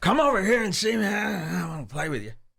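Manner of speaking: cutesy voice, sentence endings said cute. Imitating how a man on a clip ends sentences: cutesy Alex Jones impression. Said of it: "doesn't end his sentences all cute like that".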